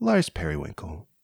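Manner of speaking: very low, soft, deep public radio voice. Podcast co-hosts joke about voices; one says a name in it: NPR voice. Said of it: "Should I use my NPR voice?".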